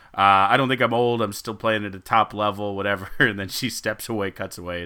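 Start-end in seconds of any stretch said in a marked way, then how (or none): none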